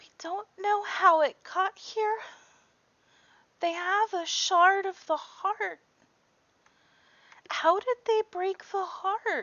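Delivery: hushed, soft, very high, tearful crying voice. Voicing a flower in a crown, speaking softly: soft voice. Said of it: "just softly goes".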